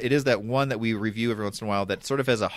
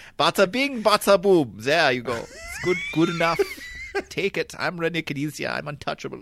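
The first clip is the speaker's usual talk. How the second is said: put-on German accent, much higher pitch; 6 semitones higher than usual. Acting out what a famous gamer said, in a German accent. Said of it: "but in a German accent".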